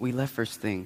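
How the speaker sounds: very soft, low, hushed half-whisper under the breath. Answering someone who looked for them at the ski lodge on New Year's Day, half-whispering. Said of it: "why are you whispering?".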